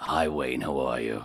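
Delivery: deadpan, low, flat, level voice. Showing how Rona talked: imitating Rona's flat high voice. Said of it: "this is how she talked".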